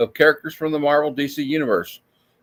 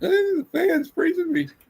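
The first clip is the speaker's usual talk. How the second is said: very high, slow, put-on old-lady voice; 4 dB quieter than usual. Joking about feeling cold from the fan: put-on old lady voice. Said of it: "I sound like an old lady".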